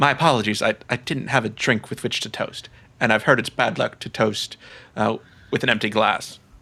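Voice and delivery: soft, quietly spoken feminine voice. Voicing a figure who turns to the player after a toast, in a feminine voice. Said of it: "you hear a feminine voice responding".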